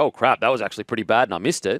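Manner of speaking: ordinary talk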